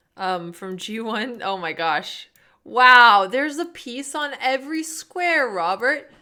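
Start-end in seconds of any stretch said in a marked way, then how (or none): 1.5-6.0 very loud, rising, fake excitement and enthusiasm. Reacting to a chess diagonal the other speaker points out: fake enthusiasm. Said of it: "Your fake enthusiasm hurt".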